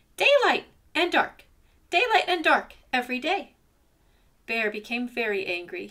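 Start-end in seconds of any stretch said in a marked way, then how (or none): 0.2-3.6 very high, squeaky shout at the top of the voice. Narrator reading Ant arguing with Bear, squeaking at the top of his voice. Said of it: "squeaking at the top of his voice".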